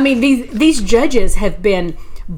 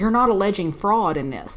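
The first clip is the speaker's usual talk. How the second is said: normal talking voice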